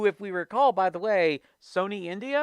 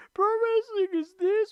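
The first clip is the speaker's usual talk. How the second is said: high, pitched-up mocking whiny voice. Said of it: "I'm like".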